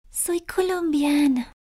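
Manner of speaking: very high voice, far too quiet, barely carrying. Introducing herself, she says where she is from, too quietly. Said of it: "Más alto, por favor".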